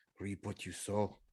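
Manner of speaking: barely audible, very quiet, bitter muttering. Playing a character, muttering under his breath while dressing: muttering under his breath. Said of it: "under his breath, Niall says".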